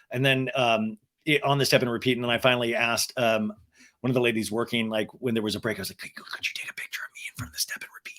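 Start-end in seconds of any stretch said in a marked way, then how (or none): 5.9-8.2 very quiet, breathy, stumbling whisper. Retelling asking a worker for a photo, imitating own whisper. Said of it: "why are you whispering?".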